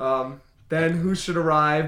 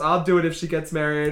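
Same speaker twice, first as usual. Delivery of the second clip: ordinary delivery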